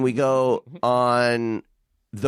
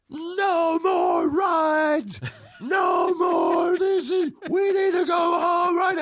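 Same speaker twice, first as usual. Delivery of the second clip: put-on play-acted very high, drawn-out shrieking child's scream. Retelling a child's outburst in a line: imitating Owen screaming. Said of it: "Owen's screaming".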